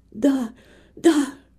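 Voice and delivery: in a whisper. A woman in bed answers a visitor who asks if she recognizes her, whispered. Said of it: "шепотом ответила Нэнси".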